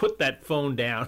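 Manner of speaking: loud, barking drill-sergeant voice. Describing a scene where a disdainful sergeant speaks, imitating a sergeant's voice. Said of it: "who uses his sergeant's voice".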